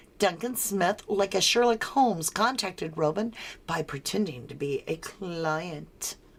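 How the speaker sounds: ordinary talk, nothing marked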